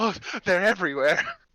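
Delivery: scared, panicked, frightened cry, shrinking back. Game master voicing a man who sees the rat and recoils: frightened man recoiling. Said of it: "he like like quickly recoils back".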